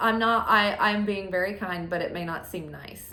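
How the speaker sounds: ordinary talk, nothing marked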